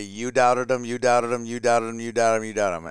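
plain

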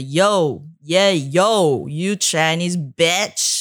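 mock very slow yell, long drawn-out "yo". Retelling how a stranger on the street yelled: imitating someone yelling. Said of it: "person yell at me".

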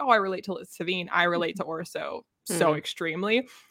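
ordinary talk

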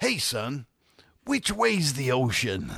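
put-on drawn-out American accent. Retelling what a tourist asked at the bus stop: imitating an American tourist. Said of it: "there was this American couple".

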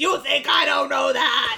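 mock held-in, mild, freaked-out scream. Describing how Hordak reacts to hearing Entrapta's name: retelling Hordak's scream. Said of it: "he freaks out and he screams".

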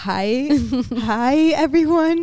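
acted, high, trembling, shaky nervous voice. Recalling first church announcements on a mic: imitating shaky nervous voice. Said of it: "I'm like shaking. I'm like freaking out".

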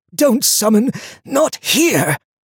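hoarse, very high, strained, weak croak. Lucas, wounded on the ground, turns to warn Donia, croaking. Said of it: "he croaked".

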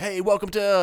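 slightly peppy.

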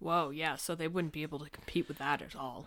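heavily sarcastic, dripping with sarcasm. Reacting to news of two movies' release dates clashing: sarcastic. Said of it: "I was being very sarcastic".

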